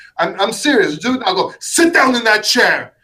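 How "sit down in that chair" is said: stern, no-nonsense, strict voice, pitched up. Showing how to order someone to sit while pointing: strict commanding order. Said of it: "As strict as you can".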